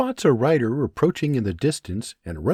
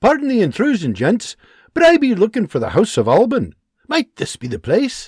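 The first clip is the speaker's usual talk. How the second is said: thick, laid-on Scottish brogue, raised voice; 9 semitones higher, 6 dB louder than usual. Reading a story where a soldier rides up: heavy Scottish accent. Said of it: "with a heavy Scottish accent".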